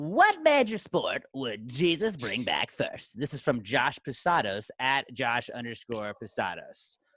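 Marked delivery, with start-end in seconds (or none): 0.0-3.2 swooping, sing-song radio announcer voice. Reading a listener's question aloud: Casey Kasem voice. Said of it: "I always read it in my Casey Kasem voice".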